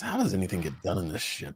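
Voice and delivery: very quiet, low, curmudgeonly mutter under the breath. Narrating Bragg walking out after everyone is dismissed: Bragg muttering under his breath. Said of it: "mutters something under his breath".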